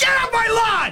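slow, deliberate, forceful and emphatic delivery with oomph. Coaching someone on how to deliver the line, the speaker demonstrates: with oomph. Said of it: "I put some oomph behind it".

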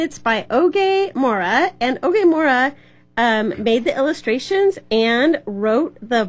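ordinary delivery, nothing marked

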